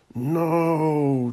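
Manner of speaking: muffled, drawn-out, high-pitched groan. A man under several pillows answers someone calling his name: groaning, muffled. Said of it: "Declan groaned, muffled under several pillows".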